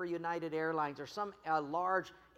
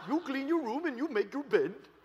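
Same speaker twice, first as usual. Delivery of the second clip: stern, strict put-on Indian accent; 7 semitones higher, 5 dB louder than usual. Retelling what a strict dad told his son: put-on Indian accent. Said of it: "his dad spoke kind of the Indian dialect".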